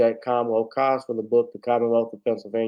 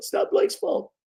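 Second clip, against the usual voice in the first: hoarse coach voice, higher in pitch. Closing a stream while losing the voice: Doc Rivers impression. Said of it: "Doc Rivers".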